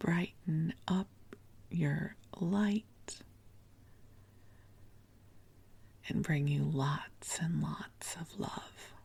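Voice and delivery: speaking in a whisper. Podcast host speaking to listeners from under a blanket fort, whispering. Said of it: "I'm whispering to you".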